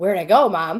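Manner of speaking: loud dog voice. Retelling finding the dog out of the corner of an eye, voicing the dog. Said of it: "And she's like".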